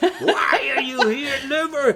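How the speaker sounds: acted very high, stretched-out, drawn-out shout. Retelling standing at a banquet table before the liver: imitating himself yelling at liver. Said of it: "because I'm yelling at the liver".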